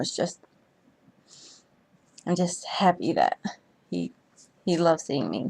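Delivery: emotional, moved. Speaker apologizing to listeners for getting a little too emotional: getting emotional. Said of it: "I didn't mean to get a little too emotional".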